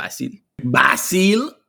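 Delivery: exaggerated put-on pronunciation of a name. Pronouncing a name on a call, saying it hella ethnic. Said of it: "I feel like I have to say it hella ethnic".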